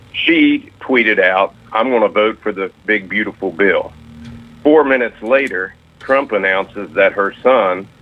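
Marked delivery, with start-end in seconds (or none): none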